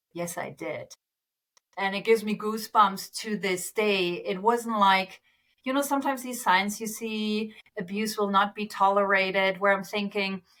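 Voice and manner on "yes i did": much gentler, soft and low gentle voice. Recounting how a client answered a colleague, retelling a gentle reply. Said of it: "with a much more gentle voice".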